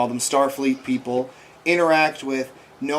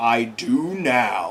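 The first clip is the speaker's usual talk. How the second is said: dark, foreboding, ominous and menacing voice; 3 semitones lower than usual. Retelling a scene where a strange voice answers a shouted question, ominous voice. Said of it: "this ominous voice just goes".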